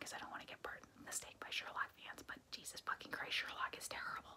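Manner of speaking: soft, hushed whisper. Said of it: "that's why I'm whispering".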